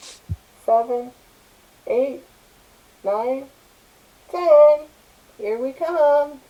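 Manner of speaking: put-on very slow, drawn-out, high small child's voice. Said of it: "You hear a little kid's voice".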